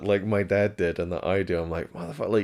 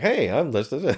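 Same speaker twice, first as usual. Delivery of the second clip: ridiculous, fake-cheery, pitched-up TV host voice; 6 semitones higher, 4 dB louder than usual. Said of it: "ridiculous, fake, chipper kind of tone".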